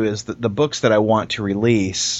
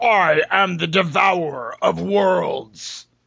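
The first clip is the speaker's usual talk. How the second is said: slow, pitched-up toy voice, each word drawn out; 8 semitones higher than usual. Retelling a work conference call, imitating the toy's talking line: Galactus toy voice. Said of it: "I hit his little voice activation, and he goes".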